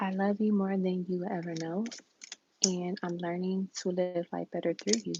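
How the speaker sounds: ordinary delivery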